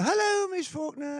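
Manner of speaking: bright, cheerful, very high voice. Retelling how Annette greeted the neighbour Miss Faulkner, imitating Annette's cheerful greeting. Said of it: "in her cheerful way".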